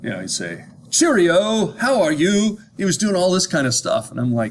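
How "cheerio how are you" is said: put-on heavy, laid-on British accent, pitched up. Speaker quotes a man who spoke to mostly Americans: thick British accent. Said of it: "he had this very thick British accent".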